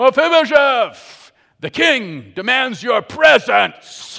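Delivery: loud, drawn-out high yell.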